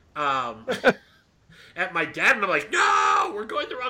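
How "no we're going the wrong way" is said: high, panicked, top-of-the-lungs crying scream. Speaker retells screaming at their dad from the backseat: retelling screaming at top of lungs. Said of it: "I'm screaming at the top of my lungs".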